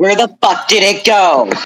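sudden, high-pitched startled blurt. Suddenly losing sight of a tarantula in the room: startled yell. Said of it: "I just imagine Beans yelling out".

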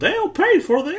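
very high-pitched cartoon mouse character voice. Answering a request for a favorite line: Mickey Mouse voice. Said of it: "What's your favorite Mickey line?".

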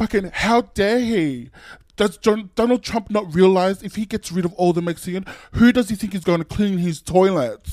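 put-on big, loud, high-pitched British accent. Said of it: "in my best British accent".

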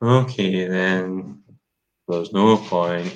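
gloomy, depressed robot voice. Describing a film robot voiced by Alan Rickman, imitating Alan Rickman's depressed robot. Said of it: "he's just like a depressed robot".

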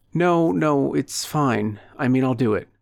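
sheepishly. A woman answering a caller on the phone, agreeing to go ahead: sheepish tone. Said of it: "She uttered in a sheepish tone".

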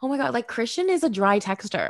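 normal talking voice

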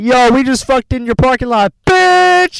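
play-acted, shrill, full-throated, very high, loud holler. Retelling what they yelled at him through the car window at 1 a.m., retelling a yell. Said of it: "Yelled at him".

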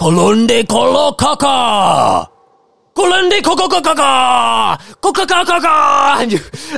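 loud shouting in warrior voices. Narrating a scene, voicing warriors shaking their spears, shouting as the warriors. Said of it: "they're just like shouting".

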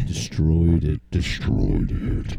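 very low, creaky, rough demonic devil voice. Asked to do the voice thing again, repeating a phrase in a devilish demonic voice. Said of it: "that sounds like Lucifer".

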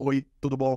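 flat, energyless robotic monotone. Showing how a greeting sounds from someone like a robot: flat, robotic, no energy. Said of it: "esse cara parece um robô".

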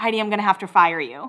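ordinary talk

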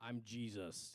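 very deep narrator voice, dropped way down low. Retelling the voice from heaven speaking to Saul: Morgan Freeman voice. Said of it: "I'm not sure that's how Jesus talked".

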